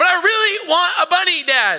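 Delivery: put-on high, whiny, childlike little girl voice.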